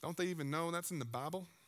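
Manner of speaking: strange put-on southern accent. Speaker teasing religious folk who talk about other people's veils: weird southern voice. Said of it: "like a weird southern voice always comes out".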